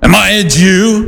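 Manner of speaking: very slow, contemptuous sarcasm, one word stretched out. Retelling a ruler's reply to a prisoner, imitating Pilate with disdain and sarcasm. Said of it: "Pilate had disdain in his voice".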